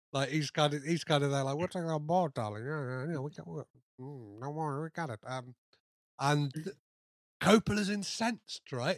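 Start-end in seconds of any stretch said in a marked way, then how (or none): 1.5-5.2 breezy, placating, unbothered tone, yeahs tossed off. Retelling a meeting with Coppola, doing a Bob Evans impression. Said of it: "your Bob Evans impression is getting more like Jackie Stallone".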